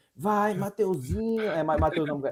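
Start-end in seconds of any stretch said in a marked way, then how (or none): 0.2-1.4 put-on, pitched-up cheering crowd shout. Retelling a wish to hear a crowd along the race: imitating a shouting crowd. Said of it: "eu quero a galera gritando".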